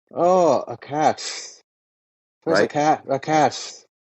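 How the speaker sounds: very slow put-on Irish accent, t in cat held. Showing how an Irishman would say cat: imitating an Irish accent. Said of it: "think about how an Irishman would say cat".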